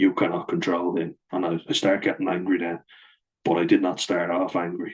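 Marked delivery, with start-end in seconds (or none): none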